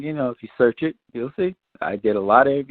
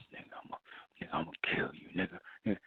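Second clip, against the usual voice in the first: seething, fuming whisper under the breath; 6 semitones lower, 17 dB quieter than usual. Retelling a video scene, the speaker voices the man beside the woman, imitating a fuming mutter. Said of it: "He's like under his breath".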